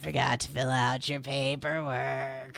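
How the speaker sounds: gravelly fake monster voice. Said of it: "I do have Ra's voice perfectly right now".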